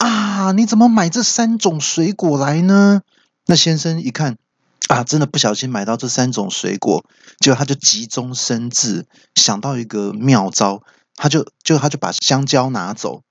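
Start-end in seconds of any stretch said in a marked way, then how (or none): 0.0-3.0 startled, very high, shrill, alarmed shout. Telling a story, the speaker acts out the wife shouting at her husband: retelling a shout. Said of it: "太太看到就大叫一声说".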